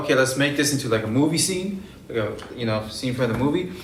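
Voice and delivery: ordinary talk, nothing marked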